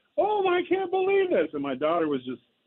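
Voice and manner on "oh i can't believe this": very high, overjoyed cheering scream. A dad recalls watching his son hit another home run, retelling a scream. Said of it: "And so I screamed it again".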